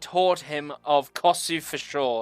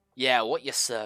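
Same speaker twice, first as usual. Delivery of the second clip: heavily sarcastic throughout; 6 semitones lower, 4 dB quieter than usual. Voicing a tavern fellow answering a player's question: sarcastic.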